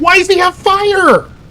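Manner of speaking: shrill, loud yelling. Talking strategy with Prash, the speaker breaks off, yelling. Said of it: "Sorry, I'm yelling".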